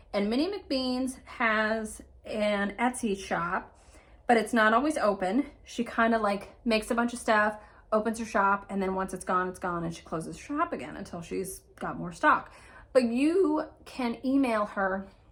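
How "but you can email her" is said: slow voice, cracking mid-phrase. The speaker explains how to reach McBeans, voice cracking. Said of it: "I don't know why my voice cracked like that".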